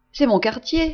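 cheerful, happy tone. The coachman answers the mother after she calls out the street, joyful voice. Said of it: "répondit le cocher d'une voix joyeuse".

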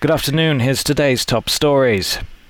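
put-on news anchor bulletin-style delivery. Asked on a podcast to do a silly voice, the host does news voice. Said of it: "I just do news voice".

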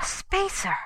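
very high, gasped-out words. Narrator voicing a character who has just turned a torch beam downward: gasped. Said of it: "he gasped".

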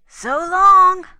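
very loud, very high, shrill holler. Narrator reads the Pony Express's parting words, hollered. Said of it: "hollered the Pony Express".

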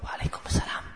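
faint, barely audible whisper. Lesson on returning a greeting, showing a faint soft reply. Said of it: "dibalas dengan suara yang lirih alias umi".

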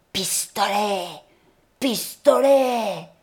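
ferocious, fierce hiss through clenched, gritted teeth. Reading the story, a boy trying to look fierce repeats his insult, hissed through clenched teeth. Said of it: "les dents serrées sur les syllabes sifflantes".

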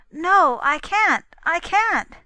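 very loud, slow crying out. Reading a story, a girl who cannot recall her name answers Constance; cried out. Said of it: "cried the girl".

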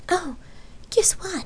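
very high, eager, can't-wait excitement. Lark asks her lover Rain a question; excited. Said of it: "she excitedly asked".

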